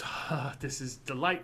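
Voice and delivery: put-on old crone's hag voice. Voicing the hag as the dragon thrashes nearby: hag character voice. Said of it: "The hag goes".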